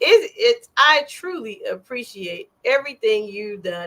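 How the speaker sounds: earnest, sincere words spoken through laughter. Sincerely thanking someone who helped on tour, laughing while talking. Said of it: "even though I'm laughing".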